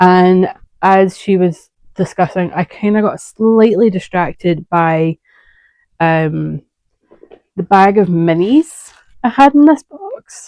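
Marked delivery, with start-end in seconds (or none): 7.5-10.5 voice cracking on the words. Telling how she got distracted while a friend was visiting; voice cracking. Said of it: "Don't know why my voice just broke there".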